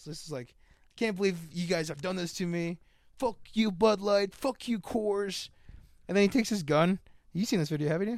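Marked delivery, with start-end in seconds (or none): 0.5-5.5 choked-up, near-tearful, heartbroken, betrayed-sounding outburst. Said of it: "he almost had tears in his eyes".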